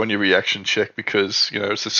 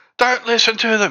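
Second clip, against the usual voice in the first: woman shouting, higher pitch; 13 semitones higher, 3 dB louder than usual. Voicing a woman who calls guards against the players: yelling woman. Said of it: "this woman here yells out".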